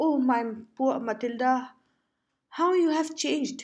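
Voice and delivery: high, astonished cry. Narrator reads a friend recognizing a changed old acquaintance, crying out in astonishment. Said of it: "Her friend uttered a cry of astonishment".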